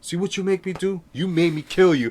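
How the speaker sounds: gangster tough-guy voice. You act out a mobster in an interview telling the dead guy he killed, Sammy the Bull impression. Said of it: "Very good".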